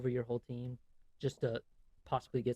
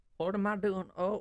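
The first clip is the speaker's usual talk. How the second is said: put-on pitched-up elderly voice; 8 semitones higher, 5 dB louder than usual. Acting out an old man with a cane who can barely walk: old man voice. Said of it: "some old dude with a cane goes up there".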